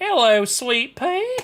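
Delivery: put-on American Southern accent with a drawl. Calling out a greeting to sweet pea in a southern accent. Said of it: "Sweet Pea worked way too well with that southern accent".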